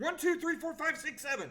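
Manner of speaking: rapid-fire, very fast, run-together mumbled counting. Showing how fast seven punches per second would be, very fast counting. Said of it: "you're mumbling your words at that point".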